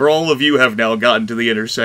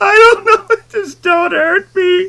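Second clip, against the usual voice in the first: put-on cracked, strained, breaking voice, much higher, louder; 6 dB louder than usual. Retelling how a blinded game character answers someone screaming at him, imitating a cracked, high-strung voice. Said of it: "it's really cracked and high-strung by this point".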